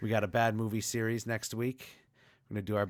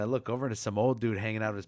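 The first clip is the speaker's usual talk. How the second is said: normal talking voice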